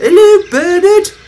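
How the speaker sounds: happy, cheerful. Two new coaches greet a character, with a happy greeting. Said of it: "the two coaches said happily".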